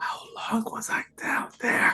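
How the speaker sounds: soft whisper, very close. Leaning on Patty after being punched, asking quietly: whispering. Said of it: "I just kinda whisper into Patty's ear".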